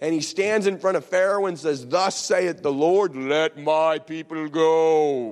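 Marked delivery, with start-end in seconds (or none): 1.9-5.3 slow delivery, word go stretched out. Retelling Moses speaking to Pharaoh: Charlton Heston voice. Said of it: "his best Cecil B. DeMille, Charlton Heston voice".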